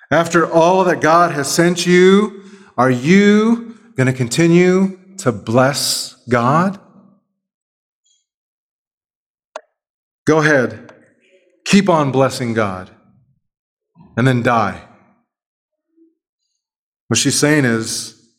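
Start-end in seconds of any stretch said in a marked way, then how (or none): 0.1-14.8 slow, dripping, acted sarcasm, drawing out "you". Acting out a line with sarcasm: sarcastic voice as Job's wife. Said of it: "The statement is seeping with sarcasm".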